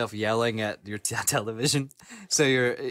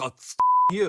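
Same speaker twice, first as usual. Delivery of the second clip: put-on sass, much higher and louder; 9 semitones higher, 4 dB louder than usual. Retelling what they say alone to the TV during Elden Ring, mock-sassy 'Oh, you!'. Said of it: "I say it like I got some sass on it".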